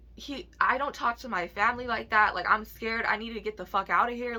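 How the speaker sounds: plain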